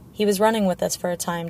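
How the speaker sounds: plain reading voice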